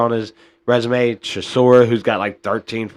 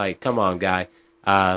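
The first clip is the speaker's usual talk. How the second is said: plain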